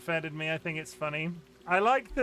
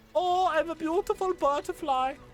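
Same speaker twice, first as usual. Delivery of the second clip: very high-pitched voice with German accent; 11 semitones higher, 3 dB louder than usual. Talking about the German word for butterfly, in A Bug's Life caterpillar accent. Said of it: "I think I'm doing the accent of the caterpillar from A Bug's Life".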